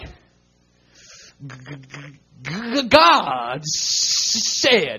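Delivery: very slow stammer over g and s in "God". Retelling how Moses probably spoke to Pharaoh, imitating Moses stuttering. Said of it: "it was probably more like".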